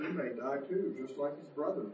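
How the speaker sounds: ordinary delivery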